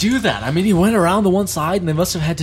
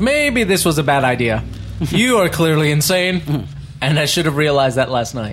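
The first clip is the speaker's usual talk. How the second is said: ordinary talk, nothing marked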